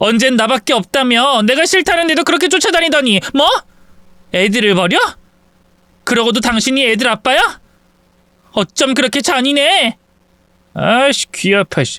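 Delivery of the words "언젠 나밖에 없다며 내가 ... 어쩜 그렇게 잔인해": high, furious, accusing outburst. Drama scene, a wife confronts the children's father about abandoning them: shouting. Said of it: "소리 좀 그만 질러".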